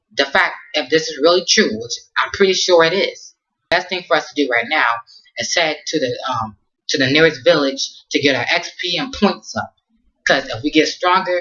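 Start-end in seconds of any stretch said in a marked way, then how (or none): none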